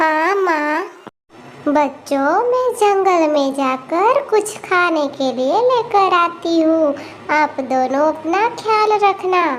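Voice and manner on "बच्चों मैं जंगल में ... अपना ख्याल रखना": very loud, innocent, kindly cartoon mother voice. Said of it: "[name] बहुत ही अच्छी और भोली थी। / उस जंगल में [name] अपने दोनों बच्चियों के साथ रहती थी। [name] बहुत ही अच्छी और भोली थी। / उस जंगल में [name] अपने दोनों बच्चियों के साथ रहती थी। / उस जंगल में [name]".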